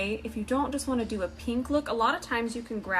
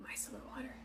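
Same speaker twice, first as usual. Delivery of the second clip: soft, very quiet, barely voiced whispered aside; 18 dB quieter than usual. During a makeup tutorial, naming a product in a whisper. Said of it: "Don't know why I need to whisper it".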